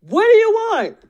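shrill, very high screaming outburst. Speaker acting out the Lord screaming in his ear, imitating a scream. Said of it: "I didn't mean to scream like that".

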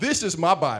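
emphatic voice with attitude. Speaker leading listeners to repeat after them with Bibles raised, with attitude. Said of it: "repeat after me with some attitude".

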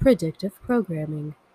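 low, fake possessed, body-snatched-sounding voice. Repeating the episode topic for a joke: put-on possessed voice. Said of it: "You sound like you, they just took over your body".

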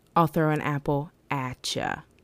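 normal talking voice

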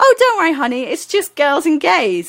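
high, breezy, reassuring voice. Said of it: "And she said".

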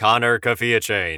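very robotic, mechanical robot voice. On a podcast, suggesting an edit to the episodes, saying a co-host's name in a super robotic voice. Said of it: "like a super robotic voice".

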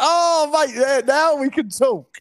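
high, thrilled, delighted geezer cheer.

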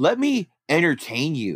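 play-acted, half-held, mild swooping yell. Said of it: "he's, like, yelling at the crowd".

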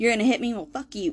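sassy, attitude-filled delivery. Retelling a driver's reply after being hit, imitating someone with attitude. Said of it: "with an attitude".

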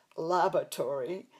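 laboratory pronounced in an American accent. English-accented speaker tries pronouncing laboratory the american way, american accent. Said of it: "I tried saying it with an American accent".

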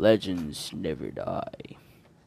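deep, low bass-register reading voice. Trying out reading a line aloud: deep voice. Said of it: "let's try reading with a deep voice".

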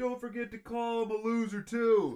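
shrill, very high-pitched holler. Imitating a mom yelling down the stairs at her gaming kid: imitating a mom yelling. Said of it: "you hear his mom yell down the".

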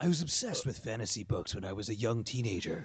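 low, deep put-on reading voice. Reading a quote aloud in a put-on voice: imagined Grant Morrison voice. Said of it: "read this part in what I imagine would be a Grant Morrison voice".

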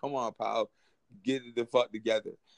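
usual speaking voice

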